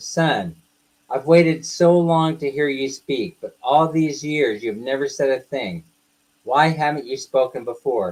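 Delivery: ordinary talk, nothing marked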